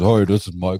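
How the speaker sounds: very deep, low voice, dropped way down. Imitating a brother answering the phone: imitating Michael's deep voice. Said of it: "he even got that deep horse cock voice".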